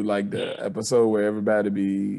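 ordinary talk, nothing marked

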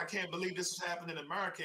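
mock sobbing, tearful, weepy crying voice. Retelling how someone reacted, imitating someone crying. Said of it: "he's crying like".

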